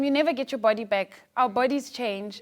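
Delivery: ordinary delivery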